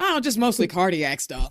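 mock nonchalant tone, low pitch. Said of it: "You say that so nonchalant".

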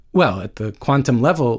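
ordinary delivery

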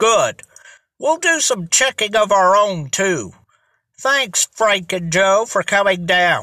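plain reading voice

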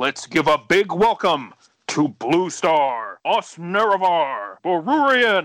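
very slow, drawn-out stage announcer voice. Introducing the guests properly, the host uses an announcer voice. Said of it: "I'm going to do my announcer voice".

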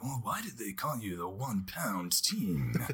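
slow narrator documentary voiceover voice, as if off-screen. Retelling an interview question from a documentary: Keanu Reeves voiceover voice. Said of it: "he would do the, like, voice. He'd be like".

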